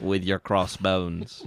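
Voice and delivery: put-on Australian accent slipping in unplanned. Ending a mock pirate promo line, slipping into an accidental australian accent. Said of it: "I don't know why I got Australian there".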